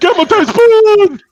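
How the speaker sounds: very high, loud, slow, surging yell.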